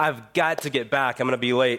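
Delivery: ordinary talk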